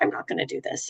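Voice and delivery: low, fast whisper.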